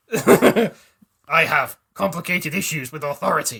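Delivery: loud put-on alien soldier character voice. Taking a turn in a game of character impressions, doing a Garrus impression. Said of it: "That's my Garrus impression".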